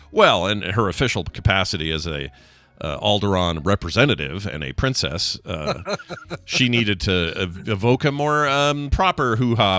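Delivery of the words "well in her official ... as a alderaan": ordinary delivery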